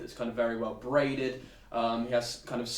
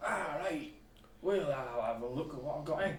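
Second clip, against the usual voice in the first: put-on Scottish shopkeeper voice, higher and quieter; 3 semitones higher, 6 dB quieter than usual. Voicing a shopkeeper looking for potions: Billy Connolly voice. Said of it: "You've gone for Billy Connolly".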